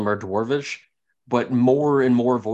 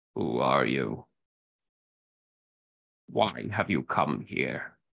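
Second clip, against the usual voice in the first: very deep, rasping, rolling, low murmur; 11 semitones lower, 7 dB quieter than usual. Narrator voicing an unseen speaker inside a tent, in a low, raspy, rolling voice. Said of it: "one low, raspy, rolling voice".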